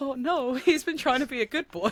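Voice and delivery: put-on bawling. Retelling own reaction to a character's death in a Disney film, imitating own bawling. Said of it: "proper bawling my eyes out".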